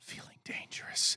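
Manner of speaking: very quiet, breathy, hushed whisper. Imitating a quarterback whispering into a teammate's ear on a flight: imitating Russ whispering. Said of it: "Russ comes up behind your ear and whispers".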